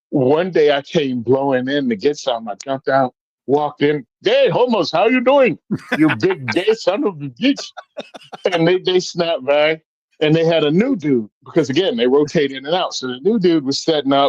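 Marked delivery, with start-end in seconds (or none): 4.2-7.7 teasing, put-on Indian accent, pitched up. Retelling walking into a store and ribbing the workers: put-on indian accent. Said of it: "with the accent".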